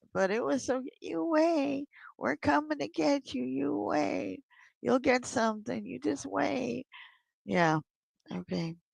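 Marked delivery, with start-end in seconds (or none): 0.7-6.9 put-on high, little old mafia-grandma voice. Acting out mom's warning, in a little old mafia grandma voice. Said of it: "She sounded like a little old mafia grandma".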